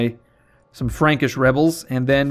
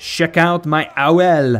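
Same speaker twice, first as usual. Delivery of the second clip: very slow put-on French accent, each word stretched; 3 semitones higher, 3 dB louder than usual. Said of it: "Charlemagne would have, like, a French accent".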